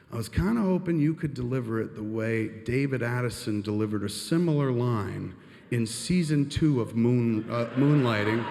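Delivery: plain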